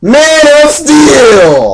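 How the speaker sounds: excited yelling. Naming the film just watched with the co-host: yelling. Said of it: "Why are you yelling?".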